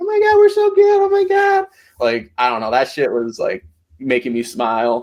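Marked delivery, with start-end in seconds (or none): 0.0-1.7 very high, giggly, gushing little-schoolgirl chatter. Retelling how two players acted on the beach, imitating giggling like schoolgirls. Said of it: "giggling like little schoolgirls".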